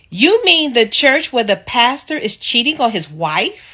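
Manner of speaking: very loud, shrill, full-volume outburst. Retelling what a woman said out loud in the store, retelling a very loud voice. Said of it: "in her loudest voice".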